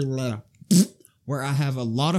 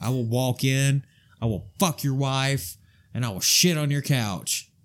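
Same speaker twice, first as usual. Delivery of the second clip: mildly combative, a little aggressive delivery. Talking about walking into places to show dominance, a little aggressive. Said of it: "You're a little aggressive right now".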